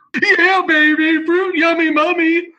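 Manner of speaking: very high, loud, drawn-out commentator voice. Asked for a Dick Vitale impersonation, saying the bracket name. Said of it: "do a Dick Vitale impersonation".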